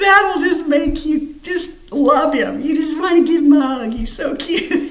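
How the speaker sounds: helpless, high, teary laughter while talking.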